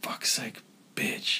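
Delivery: mock muttering under breath. Retelling a man cursing his nine-year-old's golf shot, muttering under his breath. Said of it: "he's under his breath going".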